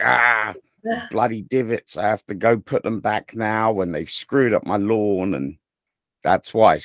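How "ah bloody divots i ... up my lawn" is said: ordinary delivery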